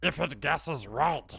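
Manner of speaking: terrible, slow, dragged-out put-on voice. Discussing a new commander card's wording, in a terrible Smeagol impression. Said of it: "a terrible Smeagol impression".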